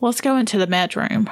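ordinary talk

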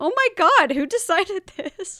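high-pitched, loud, incredulous outburst. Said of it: "'Cause I'm like".

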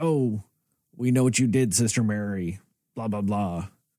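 menacing, evil, possessed demonic taunting voice. Recounting the one time they did the demonic voice. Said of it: "the demonic voice and they were like".

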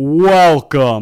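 very loud, high, booming arena announcer voice. Imitating the mouse announcer from the film: imitating the mouse announcer. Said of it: "Has the greatest voice of all time".

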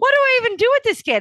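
very high, fast, amused, exasperated, disbelieving exclaim.

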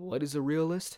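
breaking voice. Talking about being a realist, asking a question: voice cracks. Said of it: "That was a voice crack".

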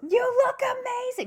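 put-on very high-pitched, loud shout. Retelling a woman calling out from fifty feet away: imitating someone yelling. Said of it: "she had to yell it twice".

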